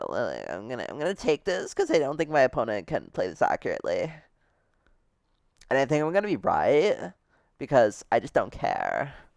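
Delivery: put-on swooping teenage girl gabbing phone voice. Playing a game and talking to viewers, teenage girl on cell phone voice. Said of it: "teenage girl on her cell phone voice".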